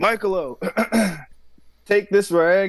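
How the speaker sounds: high, loud calling shout. Voicing Luna calling out to Michaelo to take a rag: shouting. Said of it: "Luna's gonna shout to Michaelo".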